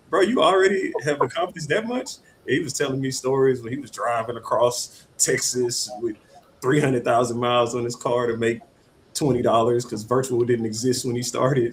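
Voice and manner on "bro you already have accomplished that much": play-acted, high, amused, laughing through the words. Retelling how their therapist reacted: imitating therapist laughing while talking. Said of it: "laughing at me".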